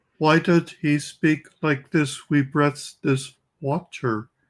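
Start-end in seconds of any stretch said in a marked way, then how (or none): 2.3-4.2 quieter, put-on fake pious voice. Asking why he spoke like this, imitate him like somebody pretending to be a pious pope. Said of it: "He sounded like somebody pretending to be a pious pope".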